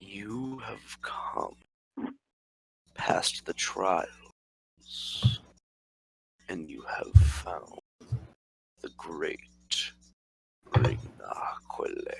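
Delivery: very quiet, whispered, slow deep thrumming drone. Voicing a perched clawed creature that addresses the players: deep thrumming creature voice. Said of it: "he begins to speak in this deep thrumming language".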